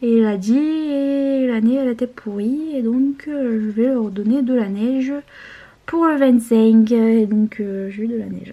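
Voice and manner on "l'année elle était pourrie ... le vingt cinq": imitated accent of southern France. Retelling what the weather god said, in a southern French accent. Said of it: "alors il a l'accent du sud".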